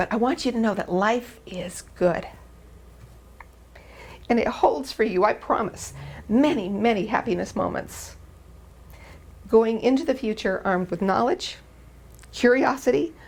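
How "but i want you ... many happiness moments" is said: moved, sincere, heartfelt emotional delivery. Telling the graduates that life is good, getting emotional. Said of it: "I'm gonna get emotional again".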